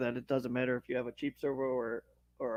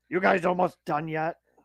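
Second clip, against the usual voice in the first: put-on angry man voice, higher; 4 semitones higher than usual. Retelling what an angry rider said on the trail: imitating an angry man. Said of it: "he was so mad".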